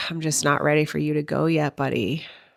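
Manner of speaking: tearful, crying speech. Retelling words said while crying together during a goodbye: retelling tearful words. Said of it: "as I'm crying and saying".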